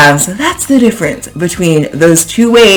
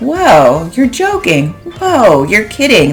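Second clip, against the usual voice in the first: genuinely surprised, caught off guard, taken aback; 4 semitones higher than usual. Teaching ways to say you're kidding, demonstrating being surprised. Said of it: "You could be surprised".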